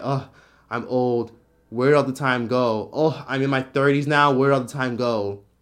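plain

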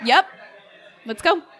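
talking while crying, words coming through tears. Player in character, turning to leave with the group, crying while talking. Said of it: "I'm crying".

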